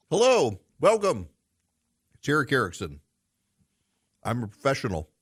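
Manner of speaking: speaking with mouth full. Host greeting listeners at the show's start, talking while chewing. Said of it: "I put something in my mouth, and I'm chewing it".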